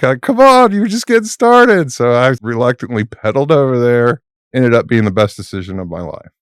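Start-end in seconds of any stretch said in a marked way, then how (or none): 0.0-1.9 high-pitched, loud, encouraging yell. Retelling being called over at the top of a climb: imitating Brad yelling. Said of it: "Brad has yelled at me".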